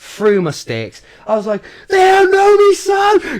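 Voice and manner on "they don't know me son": shrill, very high, very loud triumphant scream. Retelling reaching the finish gate: retelling own screaming. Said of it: "just screaming my head off".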